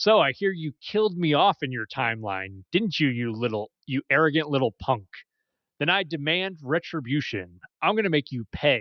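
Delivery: incredibly sassy, taunting, mock-menacing tone. Recounting a voiced character's taunt to him, in a mock-sassy tone. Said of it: "she says in an incredibly the sassy tone".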